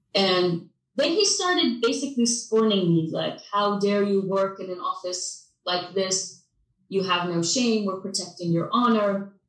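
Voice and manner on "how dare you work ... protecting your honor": ordinary talk, nothing marked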